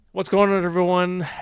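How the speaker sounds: hurried, tumbling delivery. Opening a toy unboxing video by greeting viewers, speaking too fast. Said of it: "I'm speaking way too fast".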